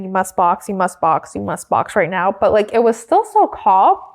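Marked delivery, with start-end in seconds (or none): none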